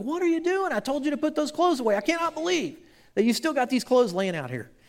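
yelling loudly.

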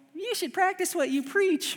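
very high, true-to-life put-on voice of another. Imitating his wife scolding him about a hack he shares: imitating his wife. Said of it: "That sounded just like her too".

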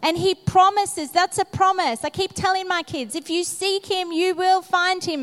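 carried away with excitement.

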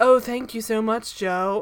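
unhurried, deliberate, slow, drawn-out, grateful tone. Imitating how she switches her voice in a scene: imitating her deeper voice. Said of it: "aware that her voice is deeper in these scenes".

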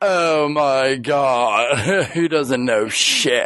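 very slow, judgmental, disgusted drawl. Mimicking the other person's reaction while being reprimanded, mock-disgusted. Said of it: "you had like disgust. Like you're like".

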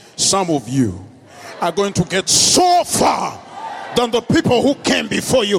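deliberately deepened, very low, swooping deep voice. Repeating an encouraging line to listeners, in a deeper voice. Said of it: "Let me repeat it in a more deep voice".

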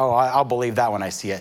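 usual speaking voice

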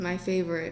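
soft, heavily sarcastic aside. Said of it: "That was sarcasm, guys".

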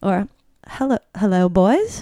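put-on slightly drunk, a bit tipsy. Trying out line readings after the acting coach asks for more, slightly drunk greeting. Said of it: "and you're slightly drunk?".

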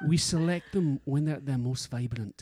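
loud, full Scottish accent in voiceover style. Performing a whisky ad voiceover, in a proper Scottish accent. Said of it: "Do it properly with a proper Scottish accent".

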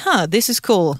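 plain

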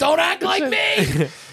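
high, slow, loud shouting.

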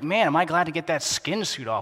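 plain

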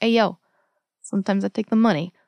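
put-on rough-around-the-edges Bronx accent. Pitching a rougher tooth fairy character for a sketch, in a rough bronx accent. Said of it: "that's the best Bronx accent I've ever heard".

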